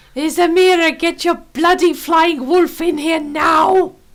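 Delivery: loud shout.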